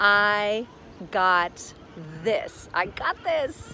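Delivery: very slow, calm, soothing, assured, confident voice. Showing how to reassure yourself while contracting; soothing, confident voice. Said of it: "Really in a soothing voice, in a confident voice".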